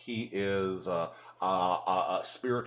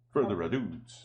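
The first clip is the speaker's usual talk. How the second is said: put-on Italian accent. Repeating a phrase the way they said it before, in an italian accent. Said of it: "I said it with an Italian accent".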